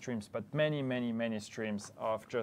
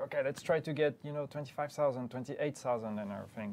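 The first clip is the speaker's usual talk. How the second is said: normal talking voice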